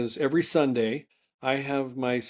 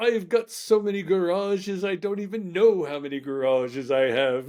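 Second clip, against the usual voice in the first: put-on pitched-up British accent; 5 semitones higher than usual. Retelling a funny Instagram video of a guy: imitating a Scottish or English accent. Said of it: "He's talking with a Scottish a-, or English accent".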